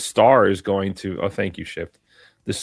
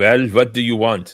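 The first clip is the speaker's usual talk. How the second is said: poor attempted Russian accent; 2 semitones higher than usual. Performing a one-line film role on request: attempted Russian accent. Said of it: "that doesn't even sound Russian at all".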